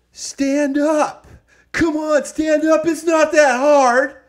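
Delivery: very loud, high-pitched, shrill, nasty, bitchy yell. Retelling a girl in the arena crowd yelling at everyone, imitating a bitchy yell. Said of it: "only in like a real bitch voice".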